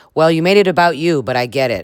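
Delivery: ordinary talk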